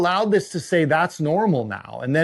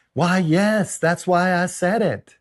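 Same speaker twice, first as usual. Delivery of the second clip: put-on Southern lady accent and voice. Retelling an interview clip, the speaker quotes the lady's reply, imitating a Southern lady. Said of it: "She's kind of a Southern lady".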